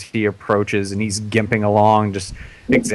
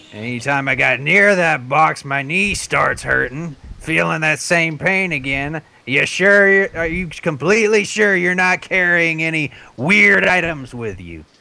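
bitter, fed-up, cranky grumpy voice, pitched up; 7 semitones higher than usual. In a role-playing game, voicing the grumpy half-orc priest to the party. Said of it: "So he's kind of bitter about that. He prefers the wonders of modern civilization. He's very un-half-orc-ish. He's the most civilized grump in history. Yeah, he is a grumpy bastard".

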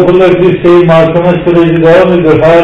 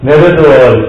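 ordinary delivery

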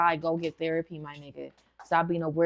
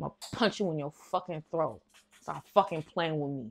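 soft, tough-talking New York accent; 5 dB quieter than usual. Threatening someone who keeps playing with him, New York accent. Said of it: "Why do I sound like I'm from New York?".

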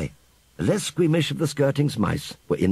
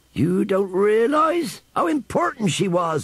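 high, full-throated roaring bellow; 9 semitones higher than usual. A narrator voices a character who will not be dissuaded, bellowing. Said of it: "he bellowed".

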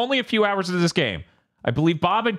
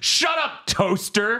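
imitated, mock screaming, much slower; 5 semitones higher than usual. Describing the main character who screams at everything in the room, retelling a scream. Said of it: "motherfucker screaming like".

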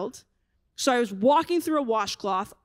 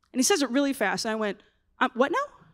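ordinary talk

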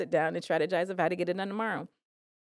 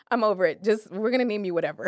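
usual speaking voice

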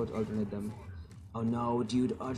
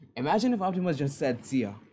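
ordinary delivery

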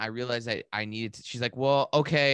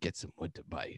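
put-on low, utterly grave, dead-serious delivery; 7 semitones lower, 11 dB quieter than usual. Retelling what a man told the speaker during a painful moment, retelling a solemn line. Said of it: "delivered it to me in like the most solemn tone".

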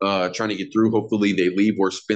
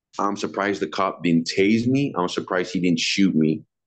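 plain

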